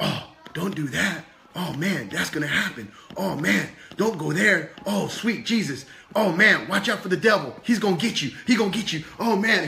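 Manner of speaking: put-on frightened, scared, fearful voice. Voicing Pepper, who lives in fear: scared Pepper voice. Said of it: "Pepper lives in fear".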